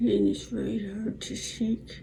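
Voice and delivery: slurred, labored, effortful speech.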